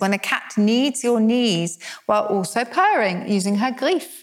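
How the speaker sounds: ordinary talk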